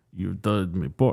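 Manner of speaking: hammed-up, playful put-on vampire voice. Retelling a movie scene, voicing the vampire guy: put-on vampire voice for fun. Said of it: "he does not talk like this, but I'm gonna do it for fun".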